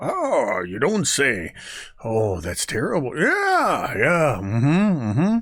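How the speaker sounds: croaky chorus of voices. Voicing heads on spikes that answer the main voice: croaking voices. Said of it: "these sort of croaks of".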